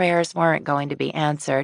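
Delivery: plain reading voice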